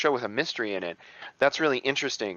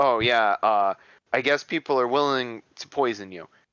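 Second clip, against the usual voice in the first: ordinary delivery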